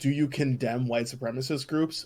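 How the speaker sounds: plain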